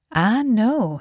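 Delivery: warm. She answers someone who mentions studying at Computon, warm reply. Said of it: "she replied warmly".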